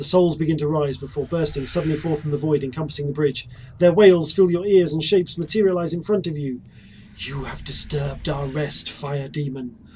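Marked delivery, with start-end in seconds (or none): 7.2-9.8 eerie, slow, drawn-out ghostly half-whisper. The narrator voices one of the ghosts addressing the fire demon, half-whispering. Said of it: "one of the ghosts whispers".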